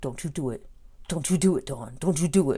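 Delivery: tense delivery through clenched, gritted teeth. Retelling how a man warned dawn not to do it; retelling through gritted teeth. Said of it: "It's kind of gritted teeth".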